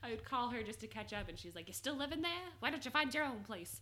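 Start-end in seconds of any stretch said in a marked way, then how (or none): 1.7-3.8 put-on higher-pitched South Carolina Southern accent. Retelling phone calls with their mother, who urged them to move out: imitating mother's accent. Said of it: "I like that accent you gave your mother".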